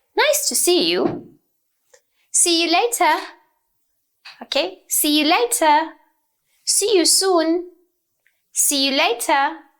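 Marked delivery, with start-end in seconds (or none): 0.2-1.0 lively, energetic, slightly surprised voice. Modeling greeting intonation for learners, with surprised, exclamatory intonation. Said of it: "That should be the intonation".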